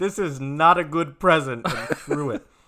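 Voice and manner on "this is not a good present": blaring, very loud and high-pitched. Speaker retells a story, quoting someone loudly. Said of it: "They said quite loudly".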